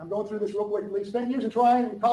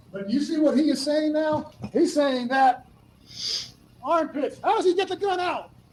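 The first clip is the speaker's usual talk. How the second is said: pressing, heated, hammering delivery, pitch rising; 6 semitones higher than usual. Arguing about how he got the gun out, yelling. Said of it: "Why are you yelling?".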